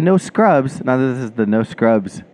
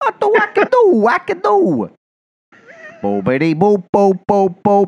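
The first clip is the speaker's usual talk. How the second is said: put-on Yonkers accent, much higher pitch; 9 semitones higher than usual. Show another person what they sound like there, imitating how people sound in Yonkers. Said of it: "that's what they sound like in Yonkers".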